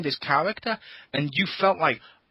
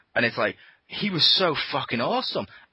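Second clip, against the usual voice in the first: usual speaking voice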